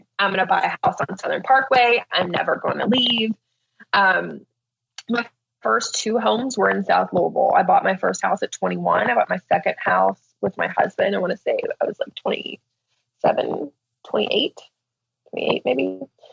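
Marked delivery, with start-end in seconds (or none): 0.2-3.4 mock proud, self-assured, boastful delivery. Recalling her own past announcement: retelling a loud, proud boast. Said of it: "very loudly and proudly like".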